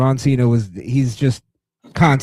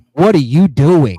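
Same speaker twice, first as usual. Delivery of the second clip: put-on disgusted voice, getting louder; 5 dB louder than usual. Retelling how CM Punk looked at his opponent mid-match: imitating CM Punk's disgust. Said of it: "the disgust".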